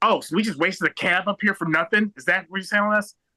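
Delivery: upset, indignant outburst. Retelling how their dad reacted to staff shutting down, imitating an upset dad. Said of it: "my dad gets so upset, he just goes".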